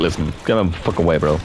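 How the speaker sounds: ordinary talk, nothing marked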